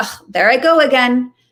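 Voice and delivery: slow, judgmental, self-scolding tone. Contrasting compassion with judgment of one's own stuck thought: judgmental tone. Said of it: "That would be a tone of judgment".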